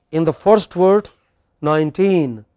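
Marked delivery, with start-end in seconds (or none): 1.6-2.3 put-on nineteen with stressed teen, last syllable hit. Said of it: "which part of the word is stressed? Teen".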